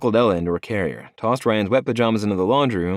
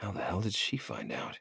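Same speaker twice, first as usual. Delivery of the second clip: gritted-teeth whisper, much quieter; 15 dB quieter than usual. Narrator confronting a caller on the phone, whispering through gritted teeth. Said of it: "I whispered through gritted teeth".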